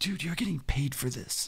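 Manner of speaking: whispered under the breath, soft and hushed. Retelling what a guy said after turning around: retelling a whisper. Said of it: "And he whispered it like".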